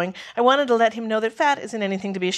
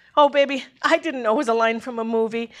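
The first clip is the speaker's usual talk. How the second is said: ordinary delivery, nothing marked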